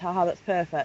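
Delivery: ordinary talk, nothing marked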